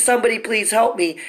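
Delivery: mild, desperate, pleading scream, put on. Retelling a hospital attack, imitating screaming for help. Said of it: "I'm screaming".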